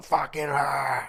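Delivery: put-on high, furious, raging shout. Retelling an actor's outburst while shooting scenes: imitating someone screaming angrily. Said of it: "screaming and shouting".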